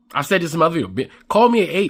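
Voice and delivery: ordinary talk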